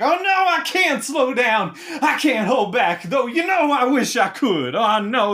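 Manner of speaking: high, full-force scream with wild pitch swings. Game master voicing a character who suddenly starts screaming; screaming. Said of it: "then he starts screaming".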